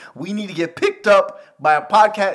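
loud, cracking high note, voice breaking mid-word. Urging listeners to subscribe and help the podcast get picked up: voice cracking. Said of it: "Why did my voice crack there?".

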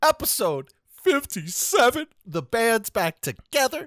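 very high, trembling, wavering, choked-up voice. Podcast host opens episode 57 with his co-host; wavering voice. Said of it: "My voice is wavering".

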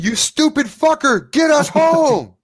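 very high, loud, shrieking scream. The game master voices Fitch, standing beside the mimic, screaming at the players. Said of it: "And he's screaming".

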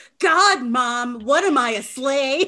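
put-on whiny, drawn-out fourteen-year-old teen voice. Continuing the bit, imitating a fourteen-year-old talking back to mom. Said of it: "those fourteen-year-olds that are like".

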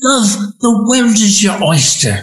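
put-on high Australian accent. A speaker quotes a woman who always encouraged him, imitating her Australian accent. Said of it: "with her wonderful Australian accent".

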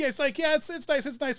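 put-on heavy German accent, laid on. Retelling chatting with a German woman in a restaurant, in a thick German accent. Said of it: "in this very thick German accent".

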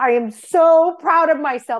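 proud drawn-out yell. Retelling shouting alone in a potato field: retelling own yell. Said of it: "I yelled it".

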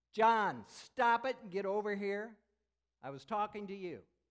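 very loud, drawn-out, harsh yell. Showing how we get our kids' attention in class: yelling at a kid. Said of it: "We yell at them".

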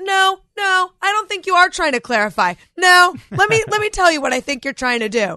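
defensive. Retelling an argument with her husband while on the defensive: imitating her own defensive tone. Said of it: "I can take that tone".

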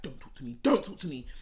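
put-on yelling and hollering. Recounting a cousin storming out of a house, the speaker is retelling a yell. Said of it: "she's yelling and hollering".

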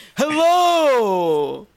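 overdone, loud, high, stretched-out, drawn-out. Asked for your best impersonation on the show, do a too-loud Scott Lucas impression. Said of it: "I went too".

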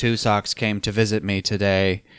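dull, droning, flat monotone reading aloud. Mimicking a man's boring diary reading from a movie, flat monotone reading. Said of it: "It's so monotone".

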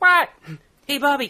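weird voice, called out very high and loud. Describing a show's opening to another speaker: weird Bobby voice. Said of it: "It's a weird voice".

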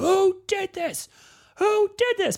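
put-on shrill scream, very high, swooping and drawn-out. Retelling a film scene, imitating the editor-in-chief screaming. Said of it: "the editor-in-chief starts screaming like".

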